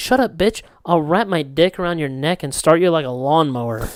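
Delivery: ordinary delivery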